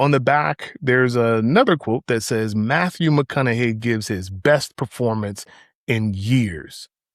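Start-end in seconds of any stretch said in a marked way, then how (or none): none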